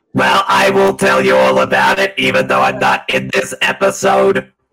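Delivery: grating, harsh character voice. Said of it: "Why do you sound like Louise Lasser".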